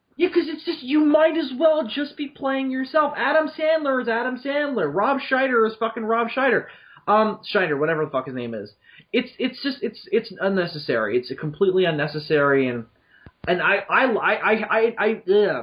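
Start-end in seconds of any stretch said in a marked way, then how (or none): 12.7-15.6 very slow, stuck stutter on I. A speaker criticizing actors playing themselves stumbles mid-sentence; stuttering. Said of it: "I'm stuttering".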